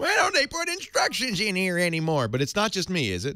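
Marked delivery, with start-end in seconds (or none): 0.0-2.3 very high-pitched fake old-timer voice, grumbling. Complaining that games no longer include instructions: put-on old man voice. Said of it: "I'm sounding like an old man".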